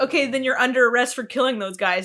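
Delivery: ordinary talk, nothing marked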